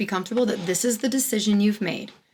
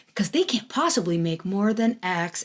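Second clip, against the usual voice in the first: usual speaking voice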